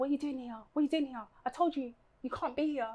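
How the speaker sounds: fast, hostile, pushy, aggressive confrontational tone. Retelling how a man on a bike confronted the speaker: imitating an aggressive man. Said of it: "he came so aggressively".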